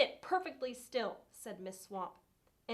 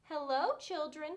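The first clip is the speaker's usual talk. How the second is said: sweet-toned voice; 4 semitones higher than usual. Reading a story aloud, the narrator voices a woman greeting the children: sweet voice. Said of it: "someone said in a sweet voice".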